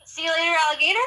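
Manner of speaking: happy, upbeat delivery. Saying goodbye after being asked to sound happy: happy, put-on cheer. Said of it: "Say it like you're happy".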